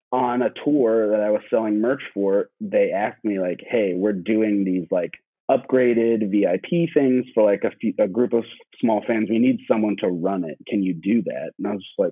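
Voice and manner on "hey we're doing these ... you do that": ordinary delivery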